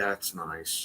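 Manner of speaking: put-on, very quiet, calm, unbothered delivery. Retelling a first reaction to a tarantula near the face: retelling own unbothered reply. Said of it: "almost in that tone".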